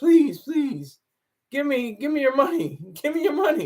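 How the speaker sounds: put-on begging tone. Mocking how political campaigns ask people for money, with mock begging. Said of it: "You have to beg and plead".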